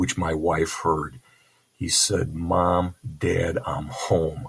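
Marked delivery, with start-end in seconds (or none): none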